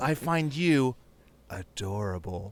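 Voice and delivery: put-on sensual, sultry, mock-sexy voice. Retelling a video where a woman speaks to an old man, imitating her sensual voice. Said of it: "the most sensual voice".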